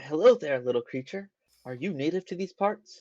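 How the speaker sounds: intrigued, fascinated, curious, wondering tone. Player's character walks up to a kobold and greets it: fascinated. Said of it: "kind of fascinated".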